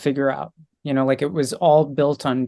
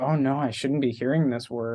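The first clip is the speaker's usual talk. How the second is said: put-on nervous manner, quieter; 6 dB quieter than usual. Retelling hearing a bad word in the theater: imitating own nervous self. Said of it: "I was nervous".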